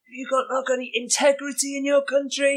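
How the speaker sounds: mock very high-pitched screaming outburst. Retelling what a lady screamed at him on the way out: imitating someone screaming. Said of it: "she come screaming at me and just said".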